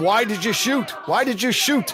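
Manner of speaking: ordinary delivery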